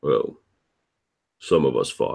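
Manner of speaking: low muttered aside under the breath. After a comrade's fighting skill is praised, a character mutters under his breath. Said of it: "says just under his breath".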